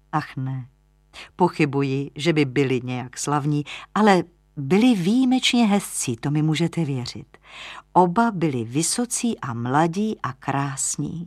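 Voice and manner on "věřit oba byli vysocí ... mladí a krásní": ordinary delivery, nothing marked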